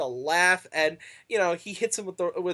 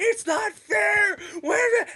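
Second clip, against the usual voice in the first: shrieking, drawn-out scream, pitched way up. Retelling a wrestler's tantrum after a near fall: imitating someone screaming. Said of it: "screaming, going".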